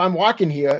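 ordinary talk

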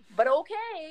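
high, loud, sarcastic tone.

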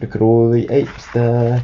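ordinary delivery, nothing marked

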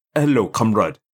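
attempted, first-try put-on Russian accent. Asked to try an accent, warming up with Russian words: attempted Russian accent. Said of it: "Let me get some Russian words out there".

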